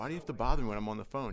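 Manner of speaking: normal talking voice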